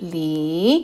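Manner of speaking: Li with a low, fall-and-rise third tone. Explaining the pinyin of the surname, dipping third tone on Li. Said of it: "L, I y el tercer tono".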